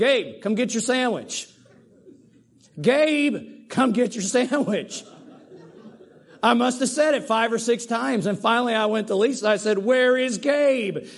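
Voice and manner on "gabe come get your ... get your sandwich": acted, drawn-out calling out, name stretched. Speaker retells calling someone through the house to get a sandwich: retelling a yell. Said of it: "I'm yelling out in the house".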